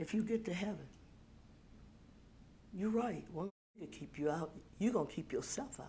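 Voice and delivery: quiet, very low, barely voiced near-whisper. Retelling what they said to a woman with a cane, in a very low voice. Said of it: "very low voice".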